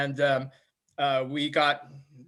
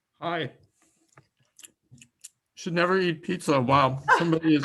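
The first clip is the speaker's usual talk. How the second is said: speaking with mouth full of food. Called on in a meeting while eating pizza: talking with mouth full. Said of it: "with your mouth full".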